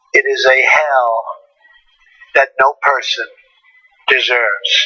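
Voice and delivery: slow, stop-start, word-by-word halting reading. A speaker reads a prepared speech addressing north korea's leader: slow reading. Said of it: "He's such a slow reader".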